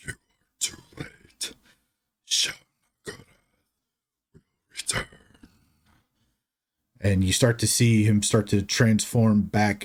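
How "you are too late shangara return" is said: deep guttural voice, much quieter. A fallen werewolf speaks without moving his mouth: deep guttural voice. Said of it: "this deep guttural voice saying".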